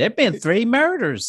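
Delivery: very high, sugary, sweet put-on Southern accent. Describing Southern news anchors, the speaker mimics one: mock-pleasant Southern accent. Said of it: "I'm just Southern".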